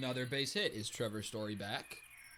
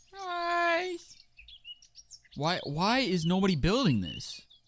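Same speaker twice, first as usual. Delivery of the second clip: very high, swooping shouting, guys drawn out; 11 semitones higher, 8 dB louder than usual. Speaker calling out to the guys, yelling. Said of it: "Sorry for yelling".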